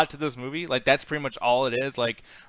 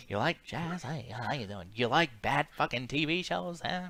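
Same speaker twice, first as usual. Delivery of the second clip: very soft, quiet, hushed voice, close; 10 dB quieter than usual. Teasing someone's attempt at a voice for the eyes, imitating the eyes' voice. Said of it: "making him sound like he's about to say".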